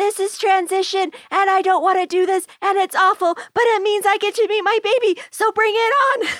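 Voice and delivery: play-acted very high, shrill scream. Retelling what a client in labor screamed at transition; retelling a scream. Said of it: "she screams".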